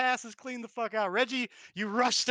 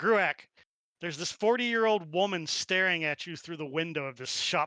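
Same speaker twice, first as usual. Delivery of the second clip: plain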